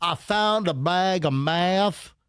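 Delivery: put-on thick Southern accent, slow, heavy, stretched drawl. Retelling a prank video where someone shows cops a find: imitating a heavy southern accent. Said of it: "a guy goes with a heavy Southern accent".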